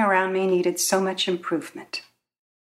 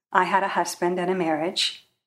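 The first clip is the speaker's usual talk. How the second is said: usual speaking voice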